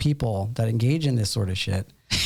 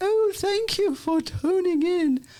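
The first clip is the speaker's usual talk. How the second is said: very high-pitched, put-on English accent. Podcast host imagining doing the whole show this way: English accent. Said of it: "in an English accent".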